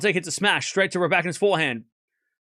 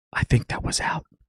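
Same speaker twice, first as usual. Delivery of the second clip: hushed whisper, barely audible; 6 semitones lower than usual. Joking that Hawkeye speaks too quietly: Hawkeye whisper. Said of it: "Hawkeye's whispering".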